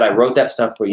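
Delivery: normal talking voice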